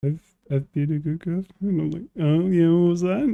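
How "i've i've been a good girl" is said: put-on, shamefaced, sheepish, embarrassed little voice. Retelling a conversation, the speaker quotes the girl's reply, imitating someone embarrassed. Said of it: "hearing how embarrassed she was getting".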